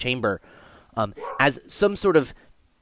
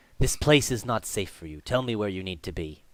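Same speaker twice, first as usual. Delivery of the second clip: dragon voice, lower and quieter; 5 semitones lower, 6 dB quieter than usual. Voicing a dragon thanking the mortals who freed it: dragon character voice. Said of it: "and it says".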